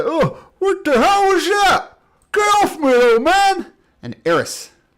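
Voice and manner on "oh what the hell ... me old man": startled, angry, high, loud monster yell. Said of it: "I said".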